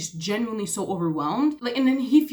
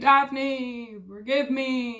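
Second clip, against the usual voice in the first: mock drunk man voice, screaming and calling out; 2 semitones higher than usual. Retelling a book scene where he comes back drunk: imitating Simon screaming drunkenly.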